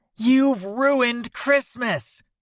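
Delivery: piercing, shrill, very high outcry. Reading a story, voicing a woman's angry outburst: shrill voice. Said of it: "A woman's shrill voice cuts through".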